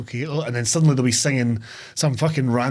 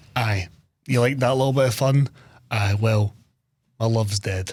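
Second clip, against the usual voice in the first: put-on somber, serious actor voice; 2 semitones lower than usual. Retelling how a film's opening turns somber: imitating Ewan McGregor, mock somber. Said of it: "with Ewan McGregor just being like".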